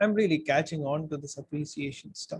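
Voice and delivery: ordinary delivery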